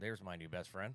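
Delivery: ordinary talk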